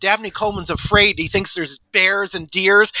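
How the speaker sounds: ordinary talk, nothing marked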